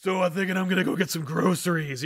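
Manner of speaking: exaggerated, overdone, raspy, gruff, gravelly growl. Mocking how a character talks to allies in sequels: imitating an overdone gravelly voice. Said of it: "You don't need to do the voice anymore".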